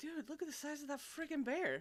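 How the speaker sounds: acted, high, stunned, awestruck astonished exclamation. Describing him facing terrifying monsters, the speaker acts out his awed astonishment. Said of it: "the awe of which he says".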